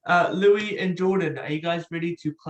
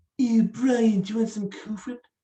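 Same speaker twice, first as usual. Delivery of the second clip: high-pitched, put-on cartoon character voice; 5 semitones higher than usual. In a voice impression game, a player opens with a Stewie Griffin voice. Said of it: "I am going to give you guys a voice impression".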